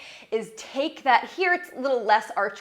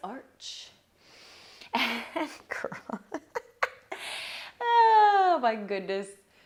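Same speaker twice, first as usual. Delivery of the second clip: very slow speech, laughing through the words; 3 dB quieter than usual. Guiding an arch and curl stretch, laughing while talking. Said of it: "I'm laughing 'cause I caught a glimpse".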